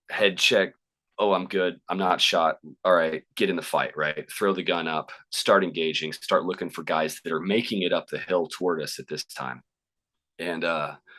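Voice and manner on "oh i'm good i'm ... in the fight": ordinary delivery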